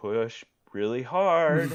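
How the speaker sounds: forced through clenched teeth. Recounting the delivery, the speaker quotes the nurses, speaking through gritted teeth. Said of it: "kind of through gritted teeth".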